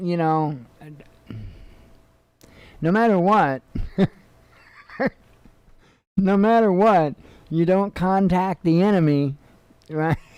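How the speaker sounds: words broken up, laughing through them. Talking about a situation they find silly: laughing while talking. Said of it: "I'm sorry, I'm laughing".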